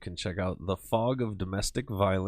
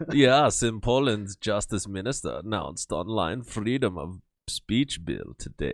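campy, flamboyant put-on German accent; 5 dB louder than usual. Told to try a polish accent, the speaker reads a news item: campy german accent.

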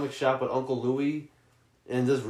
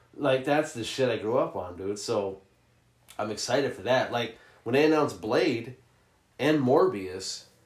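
ordinary talk, nothing marked

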